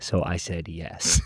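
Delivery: lazy, slow, soft, drawn-out drawl. Retelling what a man said to him, imitating the man's slow talking. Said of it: "he talks so slow".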